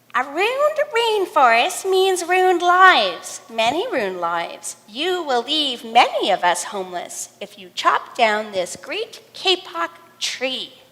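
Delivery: tiny, squeaky, sing-song little frog voice. Reading a story aloud, voicing two small tree frogs in a squeaky voice. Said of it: "They said in a squeaky voice".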